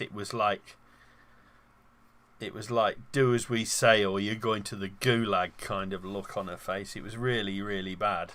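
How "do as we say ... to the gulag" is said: ordinary talk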